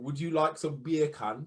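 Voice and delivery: put-on Caribbean-style West Indian accent. Giving a demonstration after being asked: West Indian accent. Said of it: "like a demonstration of that?".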